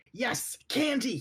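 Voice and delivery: high, thrilled, incredibly excited, right up on mic. Voicing a character shouting into a microphone for candy: incredibly excited. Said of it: "incredibly excited".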